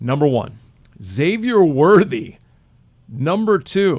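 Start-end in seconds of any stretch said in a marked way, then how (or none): 1.0-4.0 very slow, drawn-out, raised astonished tone. Reading a ranked list of rookies aloud to the others: surprised. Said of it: "you said that like you're surprised".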